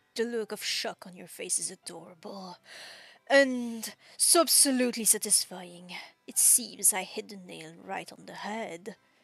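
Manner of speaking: theatrical flattering charm. A server showers a guest with compliments and sweeping gestures: theatrical flattering charm. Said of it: "His hands make dramatic sweeping gestures as he showers them with compliments. / [name] notices me, / [name] has taken up the serving for today. / His hands make dramatic sweeping gestures as he showe".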